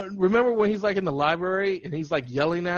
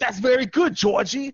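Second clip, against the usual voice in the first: speaking with a Boston accent; 4 semitones higher than usual. Doing his Pennywise voice talking to Georgie, Pennywise with Boston accent. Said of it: "I always make him sound like he's from Boston".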